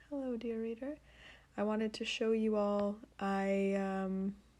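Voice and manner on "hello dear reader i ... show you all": soft, hushed ASMR voice, right up close. Getting close to the phone to greet readers: low ASMR-style voice. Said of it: "I'm gonna lower my voice, A S M R style".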